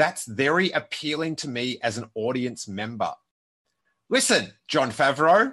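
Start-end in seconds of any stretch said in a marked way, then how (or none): 4.1-5.5 amped, fired-up, loud, high angry-sounding call. A speaker, amped by a quote, addresses its author directly, sounding angry, amped up. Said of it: "I don't know why I sound so angry".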